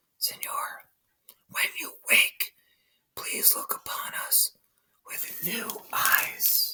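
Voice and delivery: soft, slow, breathy whispered murmur. Reading a story aloud, voicing a child beside a sleeping man: murmuring. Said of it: "He murmured in his ear".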